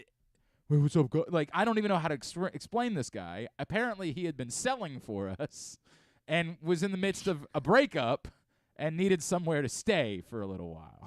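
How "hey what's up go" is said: put-on thick, laid-on New York accent, loud and fast. Describing John, a guy who now lives here, thick New York accent. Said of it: "a thick New York accent".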